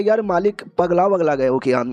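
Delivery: ordinary delivery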